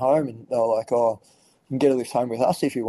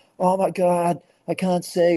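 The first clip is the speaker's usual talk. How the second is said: high, drawn-out, screaming wail; 7 semitones higher than usual. Retelling the moment after the mishap, speaker acts out Barney's reaction: imitating Barney screaming. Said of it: "Barney's screaming, instantly screaming his head off".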